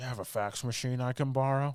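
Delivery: acted, unsettling, skin-crawling, really creepy tone. Retelling a film scene where a man asks the nurse: imitating a creepy line. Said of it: "really creepily to the nurse".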